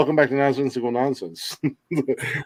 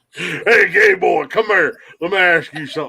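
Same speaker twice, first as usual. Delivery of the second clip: put-on country boy accent, higher; 4 semitones higher than usual. Imitating a bully who turns into a country boy: imitating a country boy bully. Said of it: "he instantly turned into a country boy".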